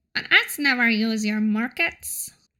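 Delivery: played-up put-on goblin creature voice. Playing a goblin answering a market researcher, in a goblin voice. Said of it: "that's my goblin voice".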